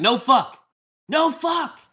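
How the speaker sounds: put-on shrill, very high, loud, slow, dragged-out little kid yell. Retelling a scene where the kid in the car talks back: imitating the little kid. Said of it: "It's like".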